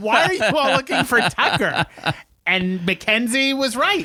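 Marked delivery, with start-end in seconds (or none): 0.0-1.9 imitated yelling, higher pitch. Retelling what was yelled at the tv during the show: retelling own yell at tv. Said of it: "I'm yelling at the T V".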